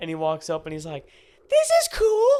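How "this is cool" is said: put-on very high, childlike small kid voice. Retelling a kid's words on a facility tour: Elmo-like kid voice. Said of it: "You do his voice way too well".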